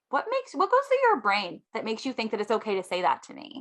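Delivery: ordinary talk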